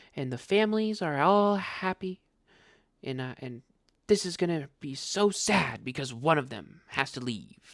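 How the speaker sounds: soft, gentle, sugary sweet put-on voice. Predicting how the commentator will talk to viewers, in a put-on soft, sweet voice. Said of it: "in a soft, sweet voice".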